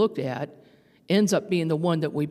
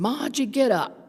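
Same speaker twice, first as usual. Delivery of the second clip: put-on Brooklyn Italian accent, pitched up; 7 semitones higher than usual. Retelling a late grandfather's voice calling her awake: imitating a Brooklyn Italian accent. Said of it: "I heard his voice in his Brooklyn Italian accent".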